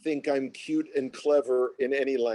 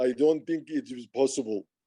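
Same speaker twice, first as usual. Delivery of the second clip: heavy put-on Russian accent. Retelling Vadim's reply to a joke, in a heavy Russian accent. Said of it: "this heavy Russian accent".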